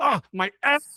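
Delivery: play-acted, very high-pitched shrieking scream. Quoting a movie character getting a wedgie from a ghost: imitating Buddy screaming. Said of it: "he just screams like".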